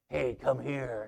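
deep, low, beckoning male voice. Recalling a guy who stuck his finger out and called to the speaker: low voice. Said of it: "he had that low voice".

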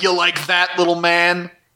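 put-on taunting, mocking, jeering tone. Retelling a villain's scene, quoting her taunting tiny heroes: imitating someone taunting. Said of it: "taunting them".

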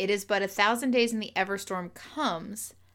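ordinary delivery

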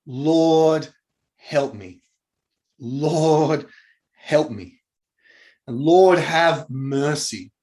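acted, desperate crying-out tone. The speaker acts out a woman on her knees begging Jesus: retelling a desperate plea. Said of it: "Such a desperate plea".

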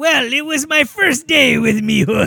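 put-on pirate voice. Telling a joke, voicing the pirate's reply: pirate voice. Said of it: "he talked to the pirate".

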